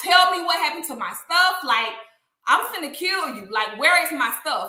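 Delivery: play-acted heartbroken, tearful, angry crying voice. Retelling getting in the guy's face behind the counter: retelling an upset, crying demand. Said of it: "I was so upset".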